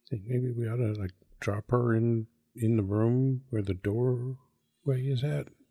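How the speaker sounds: hushed, secretive stage whisper aside. Speaking in character to Bernard so Evan can't hear: half-whispering. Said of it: "I'm just gonna kinda whisper to".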